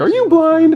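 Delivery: put-on high, excited kid voice. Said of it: "he said it like he was psyched".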